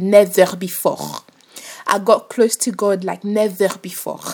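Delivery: put-on French accent over English. Speaker recalls a hard period before finding faith, in a put-on French accent. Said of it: "Let me put on my French accent".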